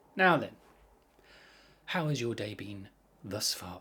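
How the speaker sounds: slow, deliberate, purposeful speech. Showing how the speaker talks to the children: speaking slowly and purposefully. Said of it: "speaking more slowly and more purposefully".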